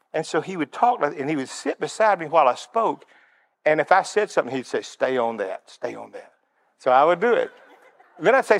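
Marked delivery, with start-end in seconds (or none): 4.8-6.3 put-on whisper, lower and quieter. Retelling what a quiet leader whispered while the speaker spoke: imitating someone whispering. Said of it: "He whispered".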